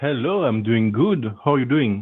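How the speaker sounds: phony put-on French accent. A caller named [name] answers the hosts on air in a fake French accent. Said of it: "100% a fake French accent".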